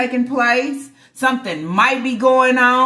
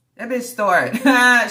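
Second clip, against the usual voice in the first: usual speaking voice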